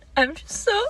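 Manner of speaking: very high, teary half-sob, crying while talking. Announcing received DNA test results in a video: crying while talking. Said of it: "I can't stop crying".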